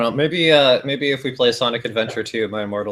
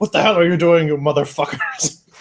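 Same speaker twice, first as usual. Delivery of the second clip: put-on bellowing outburst, high and swooping; 6 semitones higher, 4 dB louder than usual. Describing a fan story where he bursts in on the characters, imitating Dumbledore bellowing. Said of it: "he's just like bellowing like".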